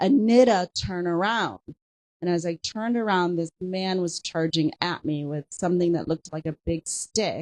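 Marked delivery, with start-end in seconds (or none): none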